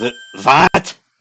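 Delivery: put-on German accent. Voicing Franziska von Karma as she answers the other character, German accent. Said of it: "the reason I'm giving Franziska von Karma a German accent".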